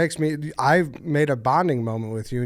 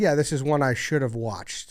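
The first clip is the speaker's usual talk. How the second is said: ordinary talk, nothing marked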